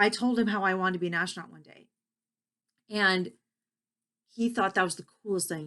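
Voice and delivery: choked-up, emotional voice catching. Speaker sharing a personal story, getting a little choked up. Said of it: "I'm getting a little choked up with this".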